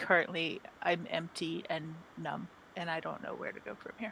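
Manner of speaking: quiet, dead-serious tone, no joking. Playing a character who chuckles, then looks up at him with all seriousness. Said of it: "with all seriousness".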